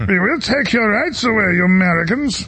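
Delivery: slow, put-on German accent. Mocking what the eu is saying to americans, in a german accent. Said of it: "in a German accent".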